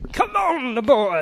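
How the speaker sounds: put-on shouting. Imitating an actor who shouts every line in a film: imitating an actor shouting. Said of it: "shouts every line".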